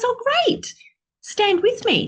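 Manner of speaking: high-pitched, loud, eager pleading tone.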